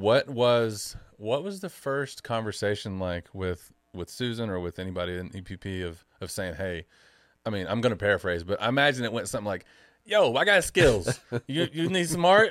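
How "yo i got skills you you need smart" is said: put-on Jersey accent, loud and very high. Paraphrasing the listener's imagined first talk with Susan, in a put-on New Jersey accent. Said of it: "I just totally changed my accent there ... I went to Jersey".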